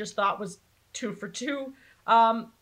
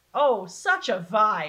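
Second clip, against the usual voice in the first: dry, insincere, slow sarcastic drawl. Describing aliens who try to enslave the Toons: sarcastic. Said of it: "I say sarcastically".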